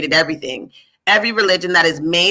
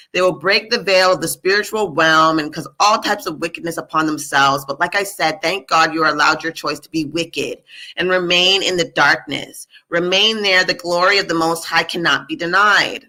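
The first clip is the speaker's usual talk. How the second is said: plain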